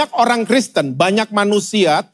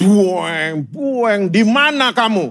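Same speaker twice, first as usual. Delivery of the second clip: very slow, drawn-out dinosaur monster call. Retelling a childhood Sunday school story, God speaking in dinosaur-like voice. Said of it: "itu seperti dinosaurus masuk ke Jurassic Park".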